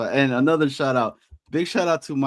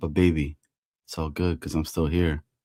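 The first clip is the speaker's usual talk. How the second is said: very low, smooth, sultry, seductive voice; 8 semitones lower than usual. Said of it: "putting that smooth, sexy voice on".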